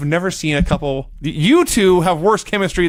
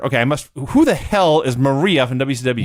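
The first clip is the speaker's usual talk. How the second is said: ordinary delivery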